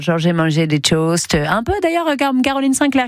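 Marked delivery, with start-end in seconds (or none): 0.2-1.3 low, put-on English accent on French words. Asking someone to describe breakfast, demonstrating an English accent in French. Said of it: "vous parlez un peu comme ça".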